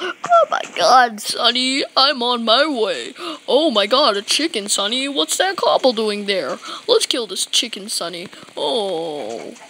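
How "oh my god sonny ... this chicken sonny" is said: put-on old man character voice, elderly manner. Heading to the house with Sonny, speaker talks in an old man voice. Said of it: "I probably don't even sound like an old man".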